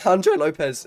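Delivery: very loud, high, voice breaking mid-word. Race commentator calls the end of qualifying, voice cracking. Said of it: "it's a voice crack and a half".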